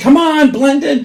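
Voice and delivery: loud, drawn-out, high-pitched yell. Retelling how they yelled to move a waiting line along: imitating own yelling. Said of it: "and then I'm yelling".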